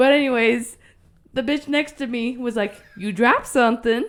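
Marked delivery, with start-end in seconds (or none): 3.0-4.1 mock cheerful, helpful-sounding, very positive upbeat tone. Retelling what the person in the next stall said: imitating someone sounding very positive. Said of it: "was just very positive about it".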